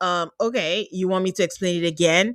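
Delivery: put-on condescending delivery. Retelling a man's reply to a woman, imitating his condescending tone. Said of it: "He's saying this very condescendingly".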